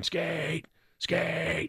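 play-acted, high screaming yell. Retelling cheering on a hockey player from the stands, re-enacting his screaming. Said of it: "And I'm screaming".

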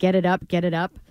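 ordinary delivery

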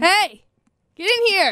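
loud calling voice, pitched high. Podcast host calling someone in to join the podcast: yelling. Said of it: "invite people on our podcast by yelling at them".

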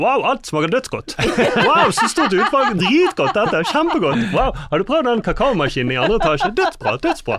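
high, loud, gushing delight. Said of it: "Han bare".

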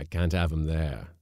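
gruffly spoken, low. The skipper speaking up in a story, gruff. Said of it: "said the skipper gruffly".

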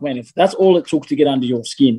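normal talking voice

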